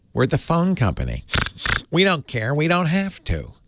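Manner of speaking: badly done character voice, sing-song, swooping pitch. Mocking a phone monopoly's attitude: terrible Lily Tomlin impression. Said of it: "That's a terrible Lily Tomlin impression".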